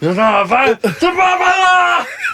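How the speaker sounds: shouting. Refusing someone a birthday invitation, yelling. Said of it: "Why are you yelling?".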